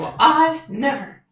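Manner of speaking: very high-pitched, astounded, astonished tone. Voicing the fairy after being called a pixie: shocked and surprised. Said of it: "She looks shocked and surprised".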